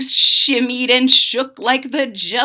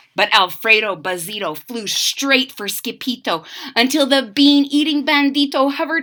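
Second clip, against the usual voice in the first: ordinary delivery, nothing marked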